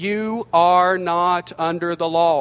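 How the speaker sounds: slowed-down reading pace. Rereading a scripture verse to listeners: reading very slowly. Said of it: "I need to read this slower".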